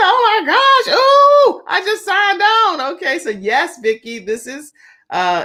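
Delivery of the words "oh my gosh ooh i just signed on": high, loud excited squeal. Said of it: "She said".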